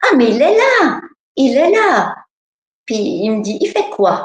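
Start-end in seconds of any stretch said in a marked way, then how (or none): 0.0-2.2 put-on high, childlike little-girl voice. Retelling how a little girl answered a question about Jesus, little girl's child voice. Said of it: "avec une voix d'enfant".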